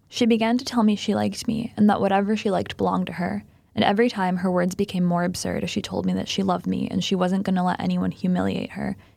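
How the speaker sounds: ordinary talk, nothing marked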